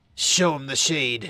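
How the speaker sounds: hissed, drawn out, dripping with venom. A character finishing his instructions to the player, in a venomous hiss. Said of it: "He hisses the last bit, dripping with venom".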